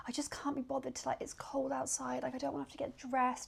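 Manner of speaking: soft self-pitying moan.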